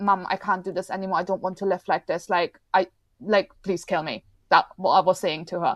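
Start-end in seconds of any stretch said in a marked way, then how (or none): 0.0-4.2 crying, sobbing through every word. Retelling a plea to mother after a hospital stay: retelling own sobbing plea. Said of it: "I was sobbing like a five-year-old".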